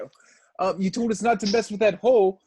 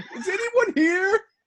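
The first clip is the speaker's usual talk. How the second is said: very high, calling-out yell; 11 semitones higher than usual.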